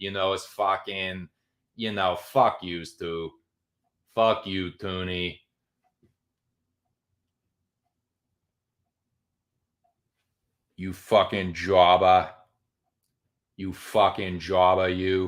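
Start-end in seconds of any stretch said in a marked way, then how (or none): 2.1-15.3 put-on Boston accent. Speaker practices a put-on boston accent on a profane line. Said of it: "I'm working on my fucking Boston accent".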